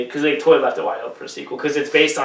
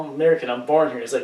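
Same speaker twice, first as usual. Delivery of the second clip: ordinary delivery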